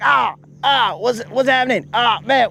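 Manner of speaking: high-pitched, hurt, yelping cries of pain. Imitating a friend named Creel feeling punches: imitating a friend in pain. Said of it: "he's all like".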